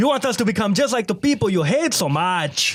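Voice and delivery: put-on Mexican accent. Quoting a favorite line from a character: full mexican accent. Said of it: "goes full Mexican with his accent".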